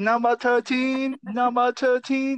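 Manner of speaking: very high, put-on Chinese accent. Speaker shows the voice he uses ordering at a restaurant, put-on chinese accent. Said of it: "that one sounds better".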